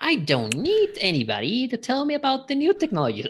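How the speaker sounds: very high, loud, screechy witch voice.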